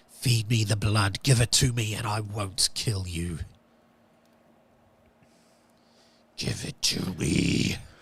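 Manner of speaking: deep demonic voice. Narrator voices the demon a player hears after his first attack: demon voice. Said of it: "you hear the demon's voice".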